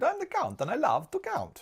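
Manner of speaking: very high puppet voice with swinging, swooping pitch. Working through a maths question, joking in the Count from Sesame Street voice. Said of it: "I sound like the Count from".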